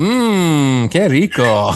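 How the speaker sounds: talking-appliance voice with long stretched "mmm". Joking about a friend's smart toilet programmed to talk: voicing a talking toilet. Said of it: "it would go".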